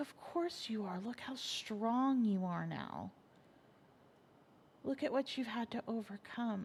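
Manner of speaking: creepily serene tone. Retelling a caller's first words on the phone: imitating a creepily serene tone. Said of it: "in the most creepily serene tone".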